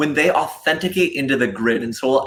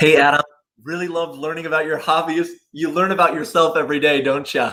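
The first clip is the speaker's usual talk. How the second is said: put-on Minnesota accent. Recording a sample private feedback message, in a Minnesota accent. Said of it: "that was the Minnesota accent".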